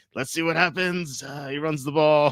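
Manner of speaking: bland, flat TV play-by-play sportscaster voice. Retelling bad game announcing, imitating Trump announcing. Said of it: "He's like".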